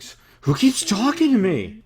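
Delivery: distressed, rattled tone. Voicing a swaying character who is trying to shake off whispers: rattled by voices in head. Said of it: "He's trying to shake the whispers off".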